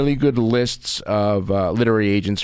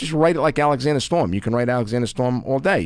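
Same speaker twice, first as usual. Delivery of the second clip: usual speaking voice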